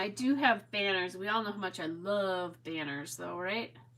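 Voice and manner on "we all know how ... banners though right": heavy, dripping, very sarcastic tone. Mentioning the banners in a scrapbooking supply stash: very sarcastic. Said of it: "That was very, very sarcastic".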